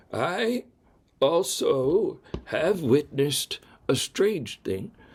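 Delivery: slow, faintly trembling storyteller voice. Reading a story a man tells by the mantelpiece, slightly quavering voice. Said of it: "in his slightly quavering voice. And I'll do the voice for a little bit here".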